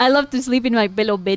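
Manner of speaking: put-on American accent. Mocking how someone who speaks no Spanish sounds: put-on gringo accent. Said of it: "Gringo mode".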